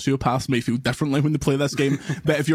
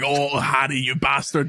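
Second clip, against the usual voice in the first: slow, put-on evil villainous voice. Mocking how a clumsy game would voice the hero turning bad: put-on evil Peter voice. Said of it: "it would start talking like this".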